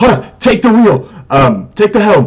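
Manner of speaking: shrill, very high, loud shouting. Voicing a ship captain ordering hearth to take the wheel: yelling order. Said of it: "Captain Dira yells at Hearth".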